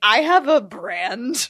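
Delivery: very slow, loud, giggling laughing delivery. Joking about having a brand, laughing while talking. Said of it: "I can't say that sentence without laughing".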